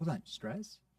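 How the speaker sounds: puzzled, confused questioning tone with marked stress. Coaching a listener on reacting when someone mentions stress, in a confused questioning tone. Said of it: "Now that's a confused tone".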